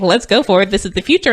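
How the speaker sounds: ordinary talk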